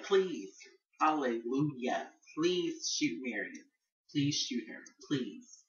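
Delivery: play-acted fervent, eager, imploring, prayer-like begging. Recalling own reaction as meredith begged to be shot, retelling own begging. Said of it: "I was begging for him to shoot her".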